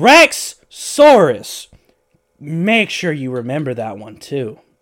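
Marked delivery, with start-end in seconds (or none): 0.0-1.7 enraged scream, shrill, very high and very loud. Telling a story, the speaker acts out a fuming man yelling: retelling a furious yell. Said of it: "He yells".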